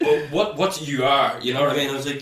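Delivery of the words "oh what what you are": put-on slow, posh young woman's voice. Retelling how a girl at a party mocked his speech: imitating a posh girl. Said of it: "she's really like".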